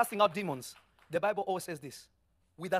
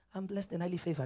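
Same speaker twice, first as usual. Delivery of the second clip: fake half-hearted, unconvincing tone, quieter; 2 semitones lower, 6 dB quieter than usual. Showing how someone says it without believing it: mock unconvincing tone. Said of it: "Even your voice saying you're lying".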